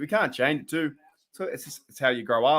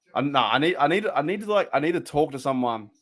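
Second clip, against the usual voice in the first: usual speaking voice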